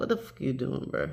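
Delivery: breathy, whispered pet-fish voice. Showing the camera a pet fish, speaking as the fish. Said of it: "He like".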